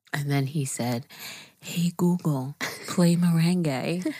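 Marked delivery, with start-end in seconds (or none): 1.6-4.1 quiet whispering. Retelling a quote that set off a smart speaker: whispering. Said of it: "You don't have to talk quietly anymore".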